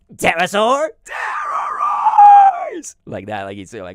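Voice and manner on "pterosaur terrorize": shrill, booming, high, swooping battle cry. Retelling how a cartoon character transformed, imitating Pterosaur's transform cry. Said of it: "Pterosaur would be like".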